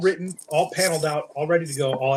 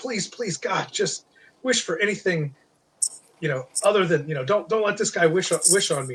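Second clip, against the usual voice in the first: mock imploring, earnest, begging tone; 3 semitones higher than usual. Retelling a story scene where a woman pleads with a man, acting out pleading. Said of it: "she's like pleading with".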